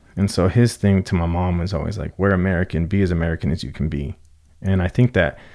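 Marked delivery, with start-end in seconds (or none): none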